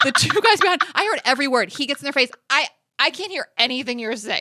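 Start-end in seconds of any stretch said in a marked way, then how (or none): 2.5-4.4 patronizing, condescending, talking-down tone. Retelling what a crew member said to two passengers: imitating a condescending tone. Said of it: "the way he said it was so condescending".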